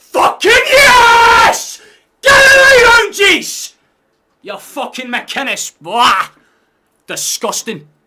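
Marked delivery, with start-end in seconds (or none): 0.2-6.3 very high, very loud, drawn-out shriek. Streamer doing the victory shout viewers join the stream to hear; screaming very loudly. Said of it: "I'm now going to scream very loud".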